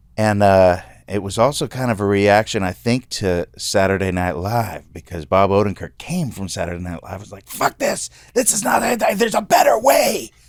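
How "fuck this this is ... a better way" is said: put-on screaming rant, higher in pitch. Retelling Bob Odenkirk's reaction to Saturday Night Live: imitating Bob Odenkirk screaming. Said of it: "I'm making it like he's screaming".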